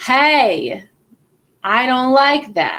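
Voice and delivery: very slow, loud, forceful angry voice. Showing what your voice does when you get angry: angry, more powerful voice. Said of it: "When you get angry, what does your voice do? ... It gets more powerful".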